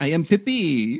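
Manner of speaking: fake French-accented voice. Voicing the character Pippi after another player says to give her one: French accent. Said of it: "Give her a French accent".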